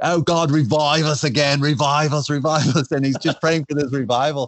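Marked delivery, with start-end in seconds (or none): 0.0-2.9 put-on slow, drawn-out speech in an Australian accent. Retelling Rick Watts' story of a church praying for revival, in Rick Watts' Australian accent. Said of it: "with Rick Watts' Australian accent".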